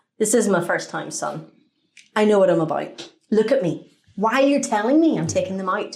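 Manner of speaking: ordinary talk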